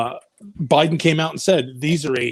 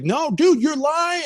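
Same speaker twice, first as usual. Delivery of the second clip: put-on man's scream, much higher, slower; 12 semitones higher than usual. Retelling how a man reacted to a report, imitating him screaming and yelling. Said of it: "And he's screaming and yelling".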